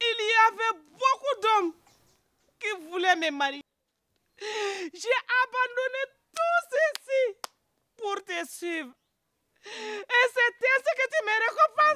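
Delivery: crying speech. A woman reproaches the man she gave up other suitors to follow, crying. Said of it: "ne pleure pas".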